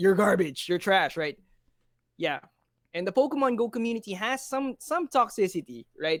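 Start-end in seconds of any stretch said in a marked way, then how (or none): 0.0-1.2 put-on mock manly voice. Imitating toxic players from other gaming communities, in a put-on manly voice. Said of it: "Manly voice, manly voice".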